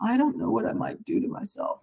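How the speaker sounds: woeful, sad, self-pitying lament. Retelling a fight with a man who threw things, imitating him being sad. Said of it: "he had been like all sad".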